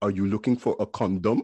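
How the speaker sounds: put-on half-whisper in a Haitian accent. Retelling your mother catching you pulling up the comforter: retelling a half-whisper in Haitian accent. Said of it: "I hear a whisper in a Haitian accent".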